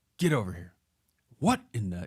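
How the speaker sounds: riled, heated scolding with swooping pitch. Player recalls his coach grabbing him at practice, imitating the coach yelling. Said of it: "elevating his voice".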